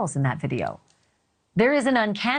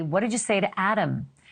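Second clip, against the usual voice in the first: plain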